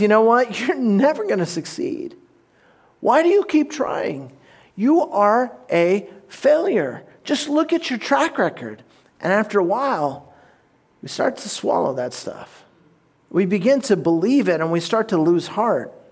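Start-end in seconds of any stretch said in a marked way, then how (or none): 0.0-8.8 put-on tempter whisper, pitched higher. Acting out Satan whispering in someone's ear: whispering as Satan. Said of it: "Satan comes along and whispers in our ear and goes".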